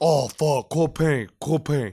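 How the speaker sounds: put-on Spanglish-accented exclamation. Retelling how he couldn't say Corporal Penny, you act him out, imitating a Spanglish accent. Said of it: "It's like Spanglish".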